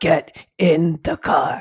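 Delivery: deep, low, loud, stern, firm voice. Speaker shows the voice used after asking three times nicely, Batman voice. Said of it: "You just go low".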